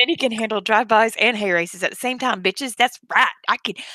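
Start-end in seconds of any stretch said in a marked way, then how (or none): none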